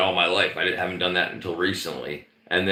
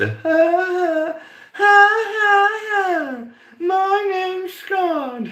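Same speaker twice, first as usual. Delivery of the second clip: put-on girly synthetic voice, much higher, louder, slower; 6 dB louder than usual. Explaining the chat-to-voice AI, the speaker imitates Scott's girly AI voice. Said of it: "it gives Scott that girly voice".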